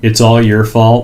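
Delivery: ordinary talk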